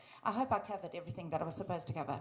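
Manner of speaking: very fast, rushed, rattled-off delivery. Wrapping up a talk while someone holds up a time sign: speaking very fast. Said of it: "I'm speaking as fast as I can".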